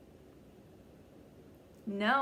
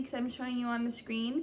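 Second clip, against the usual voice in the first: plain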